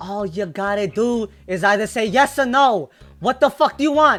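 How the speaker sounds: put-on yelling rat creature voice. Voicing a rat merchant demanding a yes or no: yelling rat character. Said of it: "hear him start yelling".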